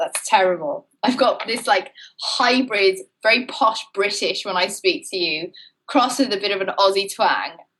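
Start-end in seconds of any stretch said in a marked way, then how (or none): none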